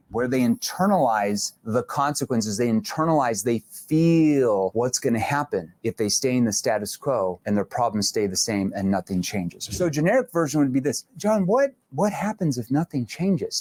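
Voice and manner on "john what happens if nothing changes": worried, concerned and caring tone. A speaker demonstrates asking a prospect named John a question, in a concerned tone. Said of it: "I'm going to say that in a concerned tone".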